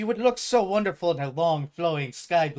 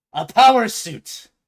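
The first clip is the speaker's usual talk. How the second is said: put-on pirate accent, higher and louder; 6 semitones higher, 10 dB louder than usual. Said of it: "as I go into pirate for some reason".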